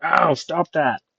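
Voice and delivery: loud, high-pitched yelling. Game master narrating a character hit by a bullet, yelling out. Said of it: "and he yells out".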